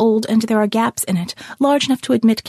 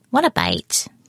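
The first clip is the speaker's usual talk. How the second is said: nasal put-on voice, lower; 8 semitones lower than usual. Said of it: "It was a nasal voice".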